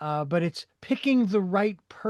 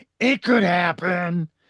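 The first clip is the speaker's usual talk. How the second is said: raspy, throaty put-on voice, louder; 5 dB louder than usual. Quoting a remembered comedy line: raspy, throaty Judy Tenuta voice. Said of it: "That raspy, throaty thing".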